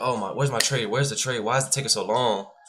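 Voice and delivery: put-on annoyed voice. Acting out a trader waiting all day for a trade: imitating someone annoyed. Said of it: "You can get so annoyed".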